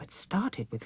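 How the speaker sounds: ordinary delivery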